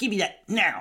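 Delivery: bratty rude voice. A parent explains discipline by acting out a child's rude demand: imitating Minna being rude. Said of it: "do something rude like that".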